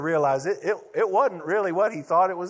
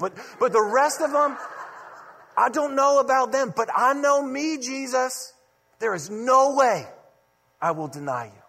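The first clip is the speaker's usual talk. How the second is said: confident, bold, deliberate, unwavering, pitched-up delivery; 6 semitones higher than usual. Retelling Peter's reply to Jesus: acting out Peter speaking confidently. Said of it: "very confidently and boldly says".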